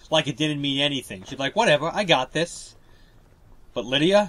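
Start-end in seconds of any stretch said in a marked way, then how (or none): none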